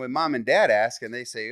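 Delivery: normal talking voice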